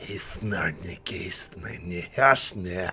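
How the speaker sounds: sneering, repulsive voice. As the struck character collapses, the creature speaks in a mocking, disgusting voice. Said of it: "in a mocking, disgusting voice says".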